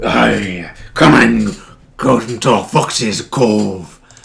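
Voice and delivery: booming, very slow, bellowing pirate voice. Imitating a robotic character with a pirate voice: Foxy pirate voice. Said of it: "he's got like a pirate voice and he's like".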